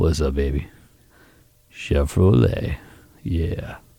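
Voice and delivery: very deep, very low, smooth, suave announcer voice. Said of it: "You gotta say it all like this".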